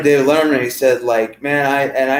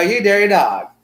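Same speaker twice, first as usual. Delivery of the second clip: put-on old-fashioned 1920s manner of speaking, higher; 8 semitones higher than usual. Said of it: "he talks like a nineteen twenties person".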